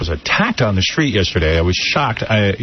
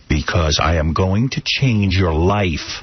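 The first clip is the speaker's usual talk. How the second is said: wild, unhinged tone; 4 semitones lower than usual. Retelling a man in a car pushing his card: imitating a crazy tone. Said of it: "crazy tone".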